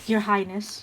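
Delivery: sarcastic, mock-respectful, deferential tone. Speaking in character to a prince: mocking tone. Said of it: "I say mockingly".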